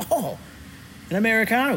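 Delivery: surprised, delighted, high-pitched thrilled "oh".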